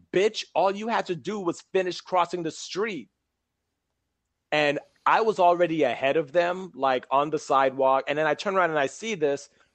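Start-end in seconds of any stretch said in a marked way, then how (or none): 0.1-3.1 acted yelling tone at half force, high pitched. Retelling a man on a bike yelling at a woman and her kid, imitating someone yelling. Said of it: "he's yelling at her".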